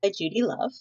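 ordinary delivery

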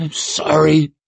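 strangled, choking whisper, catching on the breath. Narrator reading someone speaking close to Rikke's ear, whispering, choking voice. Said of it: "came the whispering, choking voice".

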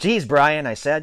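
ordinary delivery

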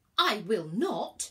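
indignant tone. Virgo answers a man who wants her ticket: indignant. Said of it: "said the indignant constellation".

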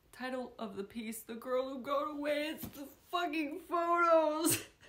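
crying while talking. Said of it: "I'm just gonna be a sobbing mess".

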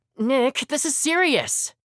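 very high, whiny, complaining tone. A student protests to a laughing friend in front of classmates, whining. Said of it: "I knew I was whining".

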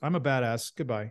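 mock casual, offhand tone. Summing up how Mihawk shows up and leaves, mock devil-may-care Mihawk. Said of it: "Very devil may care".

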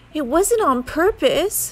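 put-on sniffly voice. Narrator reads a character answering his scolding mother, sniffling. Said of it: "sniffled Franklin".

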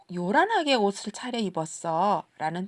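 ordinary talk

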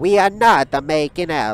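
put-on anime character voice. Commenting on a game scene, then doing a Frieza impression. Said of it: "My impression of Frieza".

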